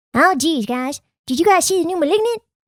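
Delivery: spot-on, high-pitched cartoon-character voice. After praising someone's impression, taking a turn at a Butters impression. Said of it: "Megan has the best Butters impression".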